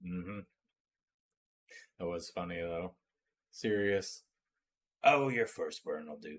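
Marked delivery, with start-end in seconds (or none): 5.0-6.4 moody, sulky put-on character voice. Quoting Sirius from the story: moody Sirius voice. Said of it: "That was more of a moody voice".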